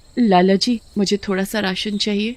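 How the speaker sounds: plain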